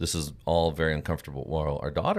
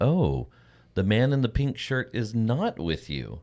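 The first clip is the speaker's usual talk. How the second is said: very loud, high, swooping, pointed delivery; 6 semitones higher than usual. Retelling what an older lady at the gate said: imitating someone speaking very loudly. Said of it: "very loudly laid this out there".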